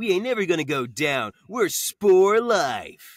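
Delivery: loud, high-pitched full LA surfer bro voice. Voicing a satyr character the casting wanted as an LA surfer bro: [name] LA surfer bro. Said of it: "they wanted LA Surfer Bro".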